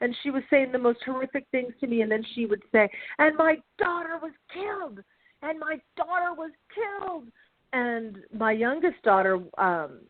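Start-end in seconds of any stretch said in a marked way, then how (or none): 3.2-7.2 play-acted, high, screaming, yelled, accusing outburst. A mother retells what a woman yelled in her face, imitating a woman screaming. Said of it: "she started yelling at me and screaming at me".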